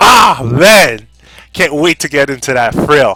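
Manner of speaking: very loud, excited yelling. Speaking to the audience about upcoming fighting games: shouting. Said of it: "Sorry for shouting".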